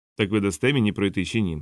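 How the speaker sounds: ordinary delivery, nothing marked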